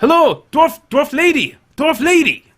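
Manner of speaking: very high-pitched, loud shout. Voicing a man waving from the wharf at the party: shouting a greeting. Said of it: "you hear him shout".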